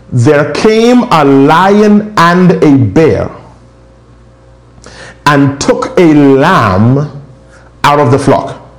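slow, measured, emphatic, "lion" drawn out. Repeating a line so the listeners won't miss it: saying it slowly. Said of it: "I'm saying it slow".

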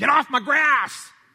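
put-on very loud, very high, drawn-out, cranky old man scream. Describing how churches treat outsiders: imitating an old man screaming. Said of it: "the old man who's always screaming".

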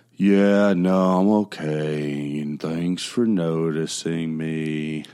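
low, very slow, dragging, drawn-out tone. Showing how someone sounds when they talk in an Eeyore tone. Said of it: "the Eeyore tone".

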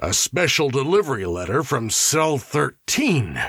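said on a breathless gasp. A warden, asked what the letter he just opened is, answers: gasped. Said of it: "gasped the warden".

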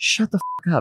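very quiet, soft, polite murmur, barely above hushed. Retelling what a tired friend says across the table: imitating very quiet and polite. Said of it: "in the most quiet and polite way ever".

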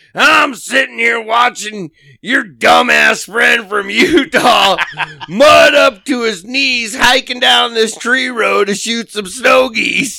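very gruff smoker's voice. Retelling a phone call from Dave; imitating Dave's gruff voice. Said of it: "so his voice was very gruff".

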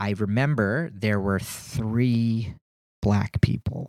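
slow, low, deliberate, "three" stretched out. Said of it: "I'm saying it slowly".

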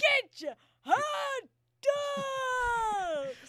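high ghostly wailing. Playing a ballpark hot dog caller making her call: hot dog call like a dying ghost. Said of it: "It sounds like a ghost dying".

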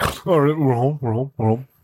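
put-on groggy, just-woken voice. Retelling how Ryder wakes in the car at the driveway: imitating Ryder waking up. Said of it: "Ryder is the same way when he fucking falls asleep in the car".

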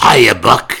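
very loud, high, gravelly voice. Recalling a radio regular's catchphrase: Andy Devine's gravelly voice. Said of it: "in that gravelly voice".

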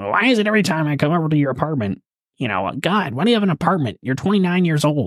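put-on grandma voice. Retelling how someone's grandma complained, in the speaker's best grandma voice. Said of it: "in my best grandma voice".

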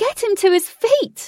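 very high, shrill, desperate shriek. Reading Katie's line as the others try lifting the stone man: shrieked with desperation. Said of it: "Katie shrieked with desperation".

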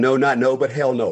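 put-on strong German accent. Retelling his mom refusing to take him and his family in, strong German accent. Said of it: "In a strong German accent".

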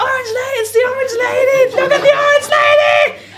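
high, loud excited shouting.

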